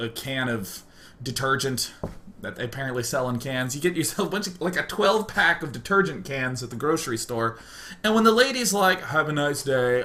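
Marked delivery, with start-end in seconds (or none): 9.0-10.0 put-on sad, gray monotone. Speaker imitates the grocery store lady saying goodbye, imitating a sad gray monotone. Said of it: "with that sad gray monotone".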